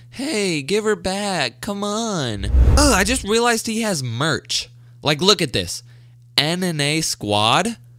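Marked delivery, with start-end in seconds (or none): 0.1-2.4 mocking, derisive, pitched-up pleading voice. Mocking how a guy reacted to a devil girl, imitating him mockingly. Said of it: "But he's over here like".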